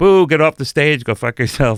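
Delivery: booing, mocking jeer of a heckler. A comic retelling how the audience heckled him on stage, mimicking jeering hecklers. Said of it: "heckling crowd jeering comic on stage".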